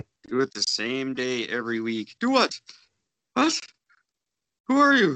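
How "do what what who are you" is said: very high-pitched put-on voice. Imitating co-host Cord forgetting the weekly podcast: impression of Cord. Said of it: "That's my impression of Cord".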